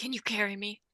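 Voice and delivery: hushed and quiet. A player sneaks up to Samson and asks to be carried, very quiet. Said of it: "I'm gonna like very quietly go up".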